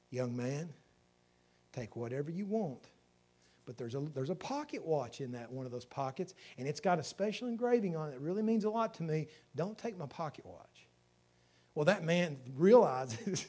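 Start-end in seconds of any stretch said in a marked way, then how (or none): 0.1-10.8 steady, composed, calm, soft voice. Retelling the president, just woken, speaking to an intruder, retelling a calm voice. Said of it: "with a calm voice".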